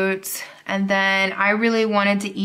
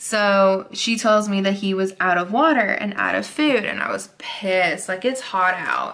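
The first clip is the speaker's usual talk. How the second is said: usual speaking voice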